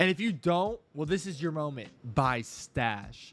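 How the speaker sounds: acted, aggressive, pushy, in-your-face tone. Reading a viewer's comment aloud: reading a comment aggressively. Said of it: "I'm gonna read it like how I think they're saying it to me".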